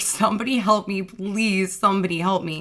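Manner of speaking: mild, contained cry, held back. Recounting screaming for help in a room of 100 people, retelling screaming for help. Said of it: "was screaming".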